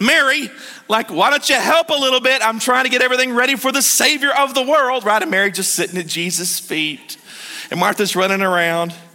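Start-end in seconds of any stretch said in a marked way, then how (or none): 1.1-5.0 acted fed-up, put-upon, exasperated, pitched-up voice. Retelling the Bible story, acting out Martha complaining about her sister Mary, mock-exasperated Martha. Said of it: "probably getting exasperated".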